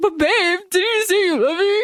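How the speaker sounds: put-on teary voice, high-pitched and pleading. Retelling a story about a couple, imitating the man tearing up. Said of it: "And then he's like tearing up".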